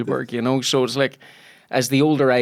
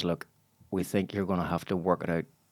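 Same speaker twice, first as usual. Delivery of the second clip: put-on quiet voice, lower and quieter; 5 semitones lower, 10 dB quieter than usual. Retelling what a casting contact said about a scheduling clash: imitating someone speaking quietly. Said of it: "sort of very quietly says".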